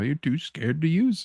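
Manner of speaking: mock, soft, offhand, dismissive jab. Suggesting how he should deliver the line: mock-dismissive tone. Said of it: "saying it in like a dismissive dismissive like".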